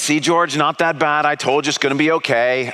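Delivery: normal talking voice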